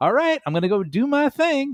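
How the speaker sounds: very high, bright, happy, cheery chirp. Describing the happy version of the gladiators: imitating a happy gladiator. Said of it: "the happy version".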